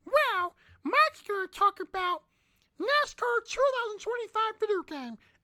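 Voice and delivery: cartoon-style puppet character voice. Opening a show segment with a parody bit: Elmo voice. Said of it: "I'm done with the Elmo voice".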